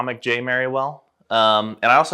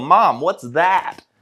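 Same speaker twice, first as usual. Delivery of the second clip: loud, unfiltered blurt in a mock child voice; 4 semitones higher, 3 dB louder than usual. Retelling asking mom a question at seven years old: retelling a loud blurt. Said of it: "So I just very loudly".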